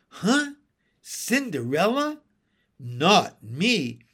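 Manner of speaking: slow, scornful, contemptuous, disdainful tone. Asked by a child whether she saw cinderella, answering contemptuously. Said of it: "said Mary Poppins contemptuously".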